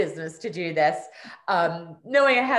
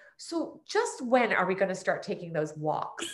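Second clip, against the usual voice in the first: pointed, cheeky, sassy teasing tone; 5 dB quieter than usual. Retelling what mom asked five years later: imitating mom's sassy tone. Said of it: "in her sassy style".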